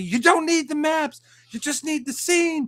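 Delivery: very high, heated yelling. Retelling an argument over maps: imitating Gary yelling. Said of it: "Gary was yelling at me".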